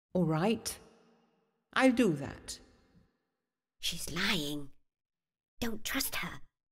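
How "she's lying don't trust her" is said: whispered, much quieter. The bee speaks to Jonaback about the Snow Queen, whispering. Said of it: "whispered the bee. / whispered the bee".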